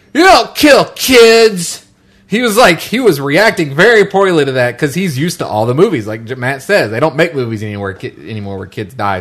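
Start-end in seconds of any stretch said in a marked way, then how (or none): 0.1-1.8 put-on very high, very slow, drawn-out shouted kid's yell. Retelling a kid in a movie theater yelling at a screen: imitating a kid yelling. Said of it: "yells out".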